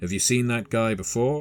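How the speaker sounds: discreet, polite aside. Voicing a character asking about a man in a suit: lowered voice. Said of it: "lowering, lowering his voice".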